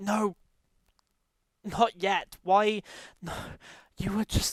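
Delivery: tearful, sobbing, crying. A player's character falls to hands and knees, crying. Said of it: "I'm I'm I'm just crying".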